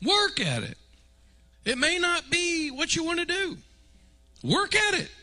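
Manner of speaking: very high, squeaky voice creeping upward in pitch. Urging listeners to work at loving one another, voice rising higher. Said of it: "Why is my voice getting higher?".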